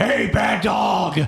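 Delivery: put-on creepy, sinister, eerie, unsettling voice. During a dice-rolling role-play, a character calls out to a dog in a creepy voice. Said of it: "in your like creepy voice".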